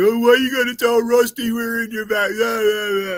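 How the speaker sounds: very high-pitched, whiny, crying wail. Retelling what a brother said when caught backstage: imitating someone crying out. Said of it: "and he cried".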